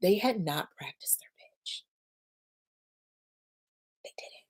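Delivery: hushed whisper. Recounting talks with founders after a pitch event, speaker whispers. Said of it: "I'm whispering because I can't believe it".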